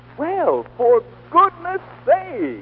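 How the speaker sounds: put-on astonishment, very high, very slow. Told not to forget to look surprised, trying the reaction with feigned surprise. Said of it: "don't forget to look surprised. How's this?".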